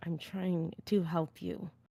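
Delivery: drawn out very slowly, hushed, through clenched teeth. Voicing a character who answers another character: through gritted teeth. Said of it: "Through gritted teeth".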